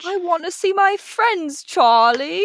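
put-on very high little-boy voice, pitched way up. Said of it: "She sounded exactly like".

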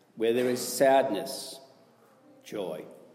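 slow, deliberate delivery with long pauses.

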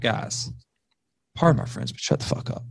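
hushed, soft, whispered aside.

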